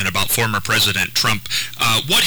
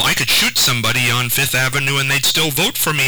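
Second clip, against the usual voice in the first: ordinary talk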